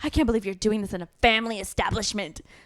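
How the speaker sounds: put-on scandalized, offended lady scolding. Retelling what the lady with the flashlight said: imitating an offended pearl-clutching lady. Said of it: "super, like, offended and clutching her pearls".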